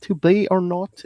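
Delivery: very high Southern drawl slipping into Australian, botched. Wanting Shakespeare read in a Southern accent, the speaker tries it: Southern twang that sounds Australian. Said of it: "That's Australian".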